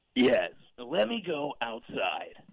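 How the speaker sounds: choppy voice, cutting out like a bad signal. Answering a question about cell service: Marcus Serta impression. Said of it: "Was that an impression?".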